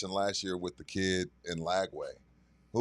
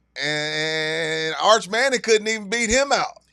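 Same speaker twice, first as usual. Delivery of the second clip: very high, very loud, hammed-up put-on country accent; 10 semitones higher, 10 dB louder than usual. Talking football, the speaker announces and puts on a country accent. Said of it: "let me put my country accent on".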